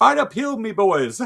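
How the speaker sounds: put-on Irish accent. Quoting what a man said, doing it in an Irish accent. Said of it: "I don't think he had an Irish accent".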